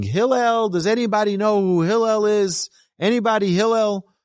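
put-on yelling. Telling the story of a man calling for hillel at the bathhouse: retelling a yell. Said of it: "he starts yelling".

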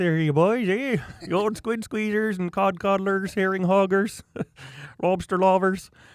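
high-pitched put-on Eastern Canadian accent. Imitating how some people from Eastern Canada talk, put-on Eastern Canadian accent. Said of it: "You're talking like this".

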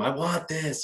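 wild, high, maniacal yelling. Retelling a fight, imitating his own yelling at the man on the ground. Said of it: "I kept yelling at him".

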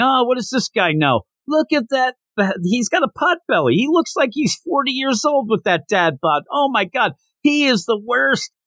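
mock very high, shrill, berating heckler's yell. Retelling how a guy reacts to a teammate ripping another apart, imitating someone yelling. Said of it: "he just starts yelling".

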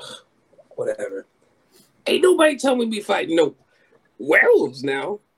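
lively, high, swooping character voice with swinging pitch. Voicing Batty closing the book on hearing howls: Batty's voice. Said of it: "he puts a little dog there and it's like".

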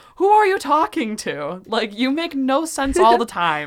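put-on high, loud shouted outburst. Retelling a film scene where Truman yells at his wife: imitating Truman yelling. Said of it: "he just yells at her".

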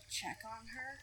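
very soft, hushed, very quiet half-whisper. In the game, a player asks the others about helping her: half-whispering. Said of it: "I'm gonna whisper that".

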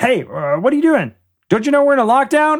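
tiny, very high little gnome voice calling out. As a gnome calling out to those going past the offices, use a small, tiny gnome voice. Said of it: "a small, tiny voice calls out".

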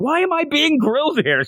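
put-on very high, upset voice. Retelling a character's protest at being questioned: imitating an upset character. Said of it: "She got so upset at him".

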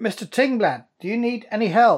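loud, high calling out, voice carrying. Calling to a person in there who seems to be chasing something, calling out loudly. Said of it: "I'm going to say quite loudly".

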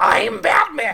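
very high, loud cartoon-like voice, trying to sound tough. Mocking a man's failed attempt at a Batman growl, sounding like Marge Simpson. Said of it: "He just sounds like Marge Simpson".

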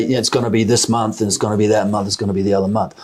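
plain

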